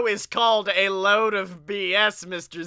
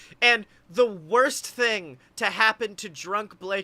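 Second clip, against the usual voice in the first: ordinary talk, nothing marked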